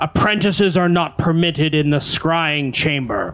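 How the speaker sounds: grand, disembodied, pronouncing voice like an unseen power. Storyteller voicing an unseen voice scolding two apprentices turned into chickens: booming voice. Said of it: "a booming voice says".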